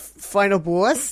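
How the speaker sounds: New Jersey accent. Coaching someone to retake a line, demonstrating it in a Joisey accent. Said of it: "say it like you were going to say it there in your jo- in your Joyzy accent".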